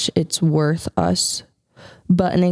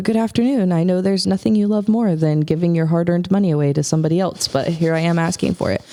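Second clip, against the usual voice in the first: put-on, overdone, hyper-sarcastic tone. Retelling a donation request once made while trolling people: imitating own hyper sarcastic tone. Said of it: "hyper sarcastic and I was just, like, trolling people".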